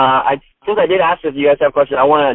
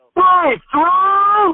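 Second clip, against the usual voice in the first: acted, sudden, very high and loud shouted outburst. Retelling how someone in a quiet audience suddenly yelled: imitating someone shouting loudly. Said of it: "real loud".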